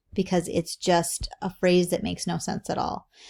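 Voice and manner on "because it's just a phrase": ordinary delivery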